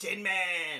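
put-on broad New York accent, pitched high. Retelling being greeted as the doors open, in a broad new york accent. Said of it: "from a proper, broad New York accent".

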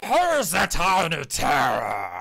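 very loud, booming, swooping giant voice. Voicing a giant who leans round a building toward the group: voicing a giant. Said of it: "and in Giant just says".

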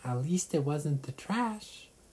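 high fairy voice full of relief. Narrator reading a story, a fairy just out of the recycling bin, in a high relieved voice. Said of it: "with relief in a high voice said".

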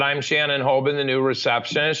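ordinary delivery

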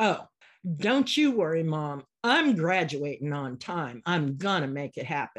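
firm, determined, vehement, defiant. A mother retells her son's reply about graduating, retelling a vehement reply. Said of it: "with the same voice and attitude back at me".

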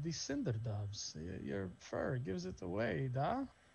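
hushed, secretive, conspiratorial confiding tone. Voicing a man who leans in toward the listener, conspiratorial. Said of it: "he kind of leans in conspiratorially".

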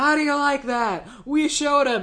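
put-on cocky, childlike taunting tone.

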